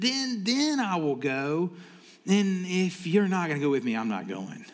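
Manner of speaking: acted-out stutter with a voice crack. Speaker retelling a scared chief of staff answering Deborah, acting out a stutter and voice crack. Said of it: "I can hear like the stutter and the crack in his voice".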